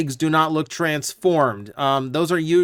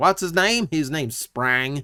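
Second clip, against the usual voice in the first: put-on American Southern accent. Introducing a Decepticon character named Sprang; southern accent. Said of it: "you threw in a southern accent".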